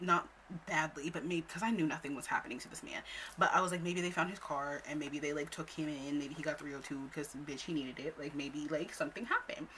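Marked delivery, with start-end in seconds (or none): none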